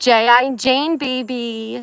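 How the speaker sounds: very slow, loud, drawn-out, uncontrolled high-pitched yell. Right after a scare, the speaker calls out to someone; yelling. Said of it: "I don't know why I'm yelling".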